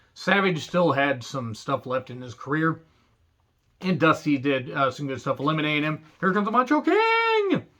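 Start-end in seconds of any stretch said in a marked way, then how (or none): 6.2-7.6 very high, excited announcer call, "King" drawn out. Retelling a wrestling commentator's call: Tony Schiavone call. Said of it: "Tony Schiavone basically did that".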